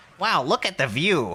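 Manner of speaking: awkward, weird put-on anime cat voice. Describing how the game's cat companion spoke, in a weird attempted anime voice. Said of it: "in like some weird attempted anime voice".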